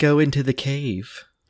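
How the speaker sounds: high, limp, drawn-out delivery lacking any authority. Mocking how the trailer's Jafar delivers a line: imitating an uncommanding Jafar. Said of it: "He's not commanding at all".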